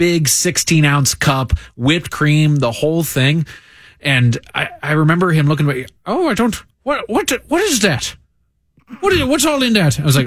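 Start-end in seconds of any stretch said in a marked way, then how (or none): 6.1-10.0 put-on Irish accent, much higher. Quoting a man's reaction to the speaker's big ice-cream order, in an Irish accent. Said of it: "Is that an Irish accent?".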